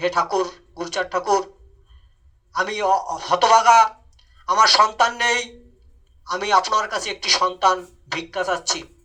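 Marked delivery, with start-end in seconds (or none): none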